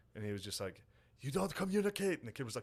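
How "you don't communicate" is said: very high, acted-out yelling coach voice. Retelling how a high school coach yelled at a player: imitating a coach yelling. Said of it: "yelling at, like, a first baseman".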